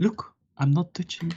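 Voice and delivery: whispered line. Whispering in character to Sequida while close by: whispering in character. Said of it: "I gonna whisper to Sequida".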